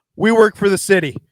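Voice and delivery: very loud, acted-out panicky outburst. Retelling a caught moment with a store worker: imitating Boots panicking. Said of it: "he totally panics, and he goes".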